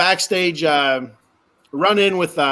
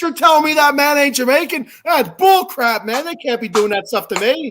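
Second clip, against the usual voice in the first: mock mind-blown, high, disbelieving, incredulous outburst; 9 semitones higher than usual. Retelling own reaction to a wrestler faking a Jamaican accent: imitating own shocked reaction. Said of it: "how much my mind was blown".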